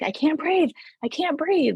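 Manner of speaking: play-acted, high, full-panic screaming. Retelling her panic on a rope course in the water, re-enacted panicked screaming. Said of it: "she started screaming like".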